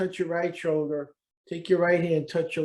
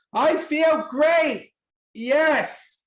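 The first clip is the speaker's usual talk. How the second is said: very high, loud, emphatic, meaning every word; 9 semitones higher, 5 dB louder than usual. Demonstrating a self-affirmation exercise to a listener: with conviction. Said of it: "say this like you mean it with conviction".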